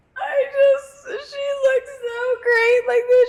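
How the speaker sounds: play-acted, very high, weepy, tearful sob-talk. Retelling a Dance Moms scene of a dog's death: imitating Abby crying.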